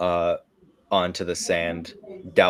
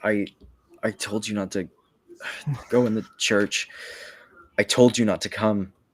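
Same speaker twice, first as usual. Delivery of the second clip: faint, weak, feeble, failing voice; 3 semitones higher than usual. Game narrator voicing a figure in a suit of armor, weak voice. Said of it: "You hear a weak voice coming from this suit of armor".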